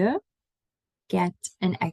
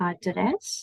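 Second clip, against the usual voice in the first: adres stressed on second syllable dres, softer, Dutch. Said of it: "Can you hear the difference?".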